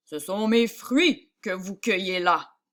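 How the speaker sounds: grave, very deep, low voice. Narrating a man confronting a woman gathering fruit in a field: very deep voice. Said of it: "l'interpella d'une voix très grave".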